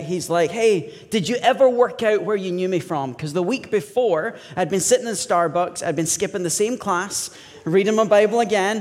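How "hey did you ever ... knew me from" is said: put-on American accent, like an American guy. Retelling a stranger in Starbucks who tapped their shoulder, in an American accent. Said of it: "an American accent".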